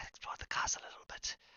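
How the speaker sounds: soft, hushed, breathy whisper. Answering a whispered question in character: whispering back. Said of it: "she's gonna whisper this back to you".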